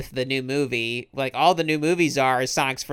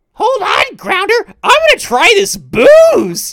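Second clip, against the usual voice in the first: shrill, booming shout swinging wildly up and down; 11 dB louder than usual. Retelling a cartoon scene about drinking alcohol, imitating Scratch. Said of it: "Scratch and Grounder's like, he's like".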